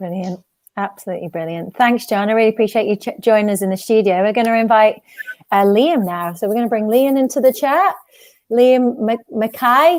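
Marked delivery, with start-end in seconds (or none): 8.5-10.0 bad, clumsy put-on Scottish accent. Introducing a guest by name: terrible Scottish accent. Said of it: "with my terrible Scottish accent".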